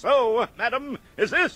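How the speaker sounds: very slow, very high, booming, drawn-out voice. Retelling how you answered a matronly voice in the ladies' room, booming back. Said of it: "I boom back".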